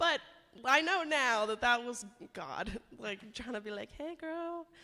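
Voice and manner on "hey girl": casual, pitched-up, tossed-off tone. Retelling how God got her attention at church: God's casual "hey girl" voice. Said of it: "is that the voice that he say".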